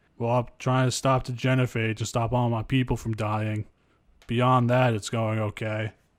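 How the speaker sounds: mock dead-toned, dry, sarcastic monotone delivery. Recalling a line from Mass Effect One, imitating Wrex's deadpan sarcasm. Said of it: "Just very dead tone, deadpan and sarcastic".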